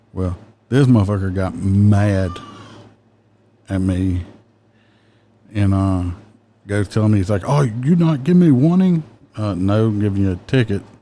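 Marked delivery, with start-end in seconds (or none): 7.5-9.1 heavy put-on Middle Eastern accent. Speaker retells a man who got mad at being given a ticket, imitating heavy Middle Eastern accent. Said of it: "He had a heavy accent".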